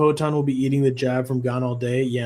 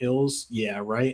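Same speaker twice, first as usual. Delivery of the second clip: usual speaking voice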